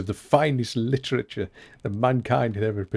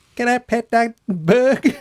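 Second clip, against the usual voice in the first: very high voice with thick Southern US drawl; 12 semitones higher, 6 dB louder than usual. Quoting how Bug Lady would say it: Bug Lady's thick southern accent. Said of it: "in her thick southern accent".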